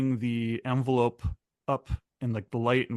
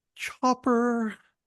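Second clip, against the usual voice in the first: very high, besotted, lovestruck gasp; 11 semitones higher than usual. Retelling how a Marine reacts to photos: imitating a lovestruck gasp. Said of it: "it really seems like he's in love with Chopper".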